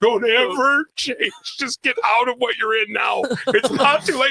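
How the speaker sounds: very high, spitting scream. Acting out giving advice to a young relative: Chris Farley impression. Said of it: "I'm gonna have the conversation like Chris Farley".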